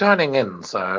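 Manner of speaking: dry, sarcastic delivery. Showing how the butler Alfred would answer: dry sarcastic Alfred voice. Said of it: "just that sarcastic".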